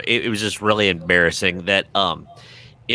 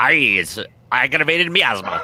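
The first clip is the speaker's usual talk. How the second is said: put-on leprechaun voice, wheezy, higher, slower; 5 semitones higher than usual. Joking about how a term sounds, in a wheezy leprechaun voice. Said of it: "something a leprechaun with breathing trouble say".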